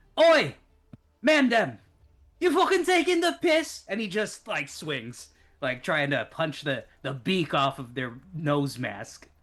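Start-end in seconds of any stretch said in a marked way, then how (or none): 0.1-3.8 very high, loud, bellowed chav yell. Playing a chav character yelling over at the bird people: chav shout. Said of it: "he yells over at it".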